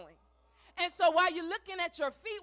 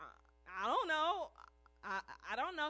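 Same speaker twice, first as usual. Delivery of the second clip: put-on stammering little boy voice, quieter; 3 semitones lower, 10 dB quieter than usual. Retelling a story where a boy answers the grocer: imitating the little boy stammering.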